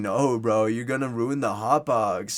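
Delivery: mock drunken speech. Retelling a buddy refusing to open the tent: imitating a drunk friend. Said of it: "drunkenly says".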